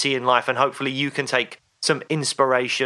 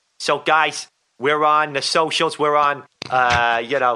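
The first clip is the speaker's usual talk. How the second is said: improvised, put-on New York accent. Asked to announce their social media in a new york accent, doing a put-on new york accent. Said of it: "can you do that in a New York accent".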